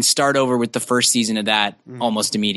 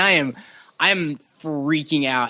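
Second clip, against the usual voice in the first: plain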